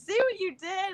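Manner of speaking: very high-pitched, harsh screaming. Retelling a cooking contest gone wrong, imitating her own screaming. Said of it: "screaming at him".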